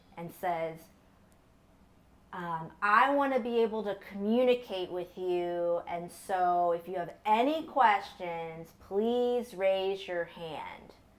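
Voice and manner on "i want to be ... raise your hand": ordinary talk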